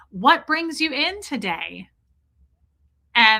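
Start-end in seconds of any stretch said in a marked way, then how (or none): 0.1-1.8 put-on robotic voice, higher. Acting out a med student entering the room: imitating a robotic med student. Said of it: "I'm gonna be her".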